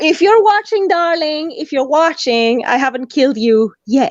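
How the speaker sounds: put-on, purely sarcastic tone. Answering a question about planning to kill someone: put-on sarcasm. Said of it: "I'm being so sarcastic lately".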